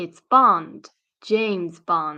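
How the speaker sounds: slow, deliberate, unhurried, self-assured delivery. Explaining how Bond says his name in a short sentence: slow James Bond delivery. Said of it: "He's very slow".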